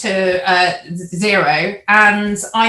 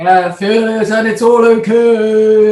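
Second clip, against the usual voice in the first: put-on resounding, deep, slow Scandinavian-style voice, drawn-out okay; 5 dB louder than usual. Talking about Wim Hof's breathing sessions, doing a Wim Hof impression with a resounding deep Scandi voice. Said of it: "resounding deep, you know, sort of, like, Scandi kind of voice".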